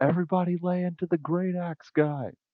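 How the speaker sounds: high-pitched battle yell. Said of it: "And I'm gonna yell out".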